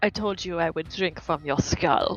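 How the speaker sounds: low, hushed half-whisper under the breath. A game narrator voicing a character who picks up a skull, half-whispering. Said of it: "looks at it and whispers".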